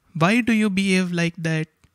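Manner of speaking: question tune climbing low to high onto "that". Demonstrating question intonation in a lesson: rising question intonation. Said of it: "Our voice goes from down to top".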